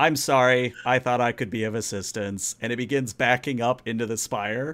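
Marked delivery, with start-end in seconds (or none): 0.0-2.5 obliging, servile robotic machine voice. Narrating the scene, the speaker voices the golf cart in a servitor-like voice. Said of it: "the golf cart speaks in a servitor-like voice".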